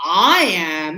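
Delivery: weight placed on "I am". Showing learners how to give importance to oneself: stress on i am. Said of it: "now I'm giving more importance to me".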